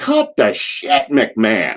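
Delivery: jeering, heckling yell. Retelling a fan heckling McMahon on TV: imitating someone yelling. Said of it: "some ass yelled".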